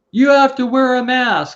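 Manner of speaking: acted, nasty, shrill top-of-lungs yell, very high. Retelling how the person at the door yelled at them: retelling an aggressive yell. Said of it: "at the top of his lungs, yelled at us".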